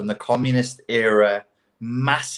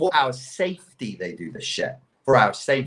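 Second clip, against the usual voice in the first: heavy, mocking sarcasm in swooping sing-song. Repeating an earlier claim, now flagging it with air quotes: sarcastic. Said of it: "I'm being sarcastic".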